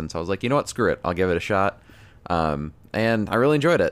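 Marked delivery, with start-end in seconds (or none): none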